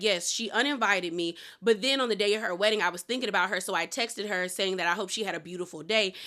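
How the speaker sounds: usual speaking voice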